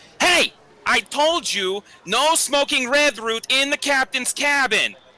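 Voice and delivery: very high, drawn-out holler, yelled. Voicing a character scolding smokers from the bar: yelling across the room. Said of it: "starts yelling over at them".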